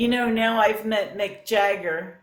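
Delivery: ordinary delivery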